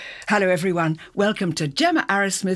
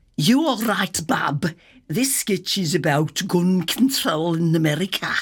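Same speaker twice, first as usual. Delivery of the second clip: put-on, rehearsed Birmingham (Brummie) accent; 2 semitones lower than usual. Showing off a practised accent for a sketch script, birmingham accent. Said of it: "I've even been practising my Birmingham accent".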